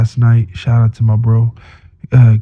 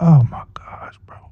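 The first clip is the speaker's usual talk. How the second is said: put-on angry voice, higher and quieter; 5 semitones higher, 5 dB quieter than usual. Retelling own reaction when the car would not start: retelling being pissed off. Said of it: "I was so pissed off".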